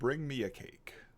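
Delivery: high, masked villain voice. Voicing a masked bird character at the table: Darth Vader voice. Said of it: "a Darth Vader voice comes out of Hemlock's mask".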